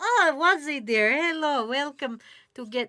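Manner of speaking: put-on old woman's voice with a Ukrainian accent. Retelling how the pierogi seller at the market greets them, old ukrainian woman's accent. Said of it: "I don't know what accent that is".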